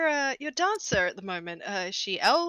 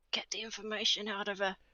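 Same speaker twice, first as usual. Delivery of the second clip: very soft, hushed, secretive aside; 2 semitones lower, 10 dB quieter than usual. A character speaks to Rex so the guy can't hear, very quietly. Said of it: "very quietly, so the guy can't hear".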